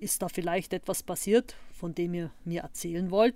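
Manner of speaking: ordinary delivery, nothing marked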